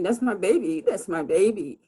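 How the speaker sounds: put-on, mild but urgent, desperate cry. Retelling being stopped by police at the line: retelling own screaming. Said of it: "so I start screaming".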